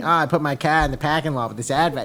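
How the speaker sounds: put-on New England accent. A Southerner mocking how people up north sound, in a put-on New England accent. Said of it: "all you hear is like the New England".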